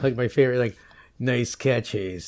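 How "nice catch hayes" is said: put-on heavy cigar-smoker's voice. Quoting a favorite movie line, imitating a heavy cigar smoker's voice. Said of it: "how many cigars do you have to smoke to sound like that?".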